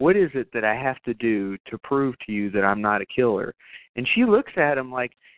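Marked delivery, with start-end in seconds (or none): none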